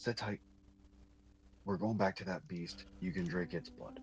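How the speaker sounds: secretive, hushed whisper under the breath. Retelling a scene, the speaker acts out a character's whisper. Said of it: "he whispers like".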